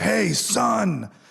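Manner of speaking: rough, loud, booming bellow, pitched very high. Retelling how a man who never spoke to them called out, imitating his bellowing voice. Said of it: "his big bellowing voice".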